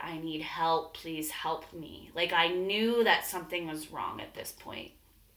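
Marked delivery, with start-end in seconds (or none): 0.0-2.1 put-on crying, tearful begging, slower. Recounting lying on the bathroom floor while her boyfriend was passed out, retelling crying plea for help. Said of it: "crying, like, begging out loud".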